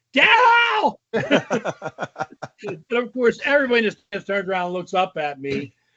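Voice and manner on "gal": shouting, much higher pitch and much louder. Speaker retells taking the phones off and yelling to Gal, retelling a yell. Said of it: "I take the phones off and yell".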